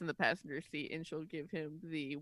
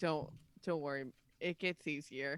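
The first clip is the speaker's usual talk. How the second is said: ordinary delivery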